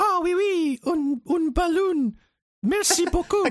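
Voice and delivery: put-on high-pitched little French kid voice. Acting out a French kid thanking a clown for a balloon: imitating a French kid. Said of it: "this French kid, and the kid goes".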